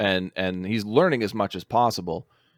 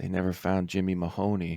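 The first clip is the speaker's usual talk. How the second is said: voice dropped much lower and quieter; 6 dB quieter than usual. Retelling a film character's line about a missing kid, in a lowered voice. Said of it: "he lowers his voice".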